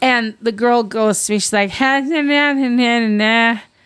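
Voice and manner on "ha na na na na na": high, very slow, mumbled garbled nonsense babble. Retelling what a drive-thru worker said: imitating garbled unclear speech. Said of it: "Are you making fun of somebody with a speech impediment?".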